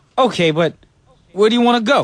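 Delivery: put-on New York accent. Acting a skit with a partner in a new york accent. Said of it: "do it with your New York accents".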